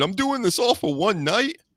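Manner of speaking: high, whiny, griping tone. Retelling what someone always complains about: imitating whining. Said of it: "always whining".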